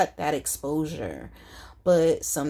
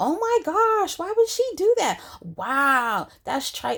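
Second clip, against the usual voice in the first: put-on very high swooping yell, wow drawn out; 11 semitones higher, 4 dB louder than usual. Retelling watching a show, imitating yelling at the TV. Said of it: "yelling at the T V".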